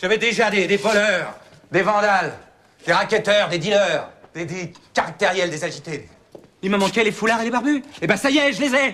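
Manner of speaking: angry, fed-up, furious outburst, pitched high. A man who is being told to calm down vents at everyone: angry outburst. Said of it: "calmez-vous, monsieur Gauthier".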